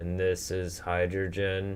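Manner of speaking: flat, unvaried, droning monotone. Imitating a teacher who always talked this way: flat monotone voice. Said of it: "talk in such a monotone voice all the time, just like this".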